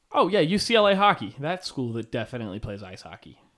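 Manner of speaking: biting, harsh, mocking sarcasm. Replying to another speaker, who then calls it sarcastic: sarcastic. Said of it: "I don't know why you're being so sarcastic right now".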